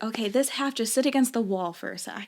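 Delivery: ordinary delivery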